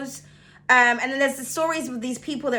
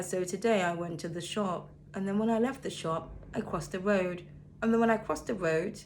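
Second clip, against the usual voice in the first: low, flat, droning monotone; 4 semitones lower, 9 dB quieter than usual. Showing how someone with a very monotone voice talks: flat monotone voice. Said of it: "someone could have a very monotone voice, so they talk like this".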